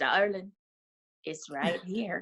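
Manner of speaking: charming, slow and easy delivery. Retelling how an actor answered a security guard: charming Matthew McConaughey voice. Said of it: "in the most, most charming Matthew McConaughey way".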